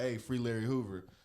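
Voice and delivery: ordinary talk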